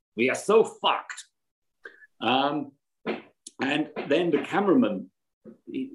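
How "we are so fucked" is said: put-on Russian accent. Retelling a helicopter pilot's first words on arrival, imitating a Russian accent. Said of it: "a guy with a Russian accent who was a pilot".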